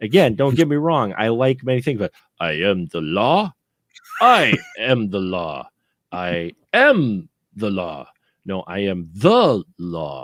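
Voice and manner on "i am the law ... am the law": very slow, drawn-out delivery with swooping, shifting stress. Speaker imagines the actor practicing his famous line: Stallone practicing 'I am the law'. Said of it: "I'm still imagining how he was practicing that line".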